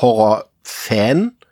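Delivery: stress on Fan, drawn out slowly.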